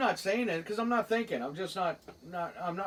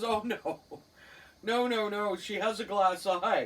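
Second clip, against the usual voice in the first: ordinary delivery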